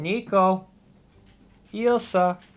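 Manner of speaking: high, squeaky, calling kitty voice. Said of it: "they much prefer the kitty voice".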